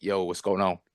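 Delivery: put-on deep voice. Joking about how Grogu might sound when he talks: deep voice as Grogu. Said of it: "this deep voice".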